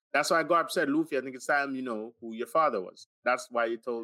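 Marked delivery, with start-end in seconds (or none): none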